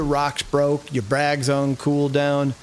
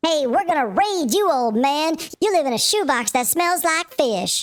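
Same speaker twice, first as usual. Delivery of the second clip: put-on very high, squeaky little kid voice; 13 semitones higher than usual. Retelling what one of two kids said to him, squeaky little kid voice. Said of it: "these two squeaky little voices".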